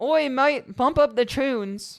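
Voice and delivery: very slow, drawn-out put-on Australian accent. Repeating a request to bump up the tunes in a put-on australian accent. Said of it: "This is my that's my Australian accent".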